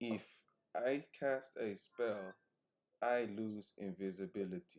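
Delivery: hushed, secretive half-whisper. Speaking in character, sneaking up on an invisible ally: half-whispering quietly. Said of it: "I go up to Fantasia quietly and say".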